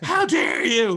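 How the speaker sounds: very high loud indignant sports-fan scream. Retelling yelling at a young athlete on television: imitating screaming at a tv. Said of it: "I'm screaming at a television".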